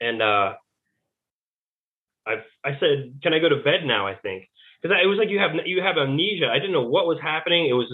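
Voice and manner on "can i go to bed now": normal talking voice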